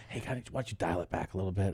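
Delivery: hushed whisper, very quiet, barely audible. Retelling a note given after a take: imitating a whisper. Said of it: "Then they'll whisper something".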